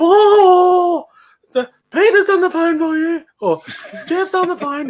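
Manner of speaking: very high, shrill, drawn-out calling voice. Speaker retelling his mum calling him to the phone, high-pitched voice. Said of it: "in this high pitched voice, she'd go".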